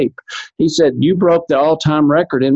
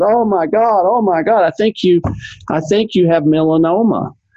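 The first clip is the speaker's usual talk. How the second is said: mock-excited, much slower pace; 3 semitones higher than usual. Retelling how a doctor reacted to his skin check, imitating someone excited. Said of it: "This guy's so excited".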